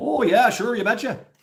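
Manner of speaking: very high, put-on folksy local accent. Describing how people talk around here, the speaker imitates the local accent. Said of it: "They kind of talk like that around here".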